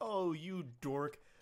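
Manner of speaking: mock playful teasing, taunting tone. Acting out a chat message as playful insults: imitating playful teasing insults. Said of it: "the playful insults kind of thing".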